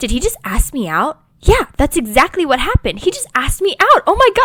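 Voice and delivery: all-out, loud, rising, swooping, excited freak-out. Acting out a book character who was just asked out: mock freaking out. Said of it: "she's freaking out".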